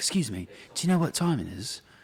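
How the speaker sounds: polite-sounding faked British accent. Retelling approaching girls at a concert to ask the time, put-on British accent. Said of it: "get girls with a British accent".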